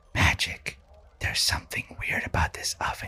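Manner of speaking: hushed voice. Whispering in character to a companion about an odd oven: whispering. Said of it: "and I whisper".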